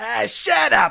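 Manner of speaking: put-on very high, very loud, rasping, rough drunken yell. Retelling how the skinny crony yells at the TV: imitating a drunken shout. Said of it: "drunkenly shouting".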